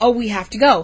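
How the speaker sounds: normal talking voice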